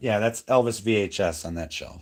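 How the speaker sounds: plain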